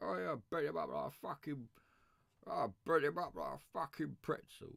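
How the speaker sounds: rough, creaky character voice. Showing how the actor talks in Legend: Tom Hardy voice from Legend. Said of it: "How does he do it in Legend?".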